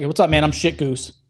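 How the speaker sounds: put-on flat, deadpan delivery. Recalling how Nate introduced himself to a stranger; imitating Nate's deadpan intro.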